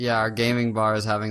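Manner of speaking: ordinary talk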